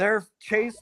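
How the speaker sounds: high, loud, panicked freaking-out voice.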